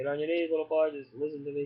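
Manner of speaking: normal talking voice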